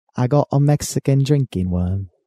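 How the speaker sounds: put-on Australian accent slipping gradually into British accent. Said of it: "kinda turning British now".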